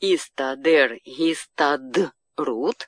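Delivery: very slow, stress moved onto the ending.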